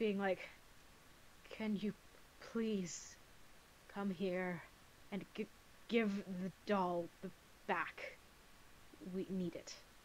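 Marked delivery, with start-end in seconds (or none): 1.5-9.7 very annoyed, much quieter. A player's character casts a message spell to another character, very annoyed. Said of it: "just in a very annoyed voice".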